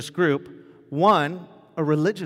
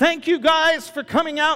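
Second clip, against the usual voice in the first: put-on very high, loud, high-pitched call; 13 semitones higher, 3 dB louder than usual. Retelling the director thanking everyone in the square: retelling a loud announcement. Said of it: "And in a loud voice".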